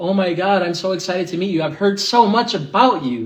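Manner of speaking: mock, phony cheerful, fake-happy tone. Recounting being introduced to a mom: imitating a fake-happy mom. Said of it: "They're like that fake".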